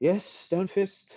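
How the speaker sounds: put-upon, bored annoyance. A game master voices a character turning toward Yagra, with bored annoyance. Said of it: "a bored annoyance with which he goes".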